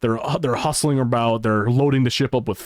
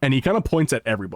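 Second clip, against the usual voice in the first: ordinary talk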